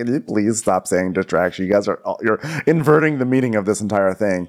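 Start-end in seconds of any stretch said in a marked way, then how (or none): none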